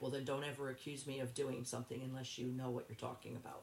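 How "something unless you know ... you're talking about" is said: normal talking voice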